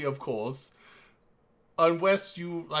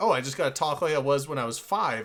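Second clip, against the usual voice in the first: usual speaking voice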